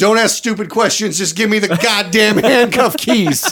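lightly barked yell. Telling a story, the speaker reenacts what they yelled at him: reenacting own yell. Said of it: "I literally yelled at him".

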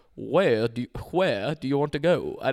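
fake Southern accent. Retelling what a man asked, attempting his accent: bad Southern accent. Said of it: "That is the worst Southern accent I've ever heard".

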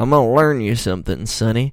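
put-on 80-year-old man voice. Speaker explaining country music history slips into an old man voice. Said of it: "I sound like an 80-year-old man".

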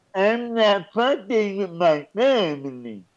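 gummy no-teeth mumbling. In a group debate about money, one speaker answers talking like he has no teeth. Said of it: "Why are you talking like you ain't got no teeth?".

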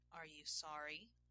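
usual speaking voice

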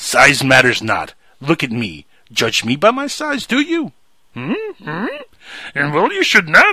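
pitch swinging all over the place. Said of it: "I'm not doing the Yoda voice".

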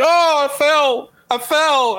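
put-on very high, faint old-man voice crying out. Retelling a funny phone call where an old man fell: imitating an old man. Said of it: "it was this old man, like, barely can hear".

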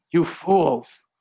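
bombastic, scolding preacher voice. Imagining opening the sermon this way: mock fire-and-brimstone rebuke. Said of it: "a fire and brimstone sermon".

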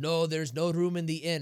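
barked fake Russian accent. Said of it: "I threw on the Russian accent there".

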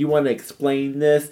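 mock sassy confident tone. Acting out a wife confronting her husband over a prank, in a mock-sassy, confident voice. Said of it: "She's feeling confident and sassy".

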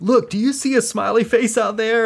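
put-on shrill, very high yelling. Retelling a comedy bit where a teacher yells at kids: imitating Sam Kinison yelling. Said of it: "he's yelling at the kids".

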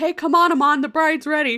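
high, loud yell carried across a distance. Retelling a film scene, a call that the bride is ready: imitating Keshav yelling from far away. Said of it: "Keshav yells from, like, way far away".

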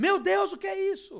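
very high, very loud, shrill shout. Retelling a bill appearing from nowhere, the speaker voices a man's reaction: retelling a shout. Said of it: "O cara olhou para mim e gritou".

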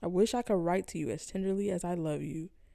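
ordinary talk

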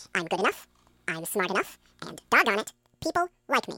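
very high, very fast, sped-up fast-forwarded tape voice. Demonstrating how a recorded phrase sounds when sped up, sped-up recording. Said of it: "And I speed it up. It sounds like this".

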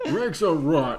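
loud, punchy New Jersey mobster voice. Discussing a cartoon episode, speaker repeats Scooby's line as a New Jersey mobster. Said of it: "sounded like a New Jersey construction working mobster".

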